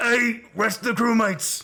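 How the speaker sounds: loud, very high, gruff calling out. Calling the crewmates up from the top of the stairs: gruff Vers voice. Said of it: "Gruff and grapple".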